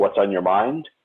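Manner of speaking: ordinary delivery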